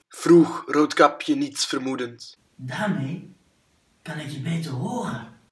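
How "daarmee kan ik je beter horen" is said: wolf's very soft, barely voiced whisper. The wolf, addressed as grandmother, answers the girl, whispering. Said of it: "Fluisterde de wolf".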